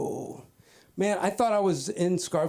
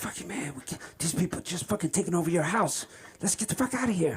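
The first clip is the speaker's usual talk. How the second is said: hushed stage whisper, under the breath. Retelling what a man whispered in the garage, imitating a whisper. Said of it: "and he's whispering".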